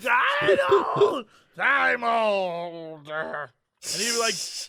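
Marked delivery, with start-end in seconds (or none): 0.1-3.1 put-on drunk voice, higher pitch. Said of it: "I'm so drunk right now".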